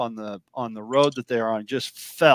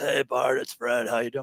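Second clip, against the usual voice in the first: casual, relaxed phone voice; 6 dB quieter than usual. Retelling a friend's call after his accident: imitating Fred's voice. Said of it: "and his voice".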